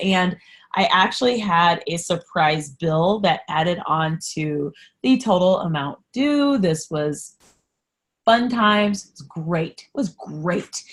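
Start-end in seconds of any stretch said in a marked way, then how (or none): 6.6-10.8 heavily sarcastic tone. Describing a surprise bill added to a debt total: sarcastic. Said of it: "That was sarcasm".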